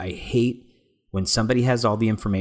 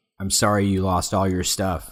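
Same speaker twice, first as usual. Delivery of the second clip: put-on condescending tone. Retelling a scene where Dick Grayson gets super condescending: imitating Dick Grayson being condescending. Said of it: "when Dick gets super condescending".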